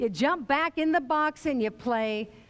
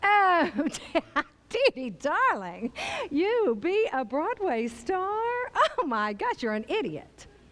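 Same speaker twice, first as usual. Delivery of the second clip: cutting, very critical voice; 4 semitones higher than usual. Retelling the critical voice inside the head: Bette Davis voice. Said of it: "this voice that sounded a whole lot like Betty Davis".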